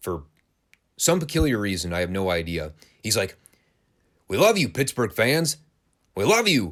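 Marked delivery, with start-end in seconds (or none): 4.3-6.7 loud, high-pitched, bold shout. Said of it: "shout very boldly".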